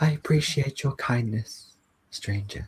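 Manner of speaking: small, tiny lizard creature voice. A yellow lizard speaks into the listener's mind: tiny lizard voice. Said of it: "You just hear this tiny lizard voice in your mind".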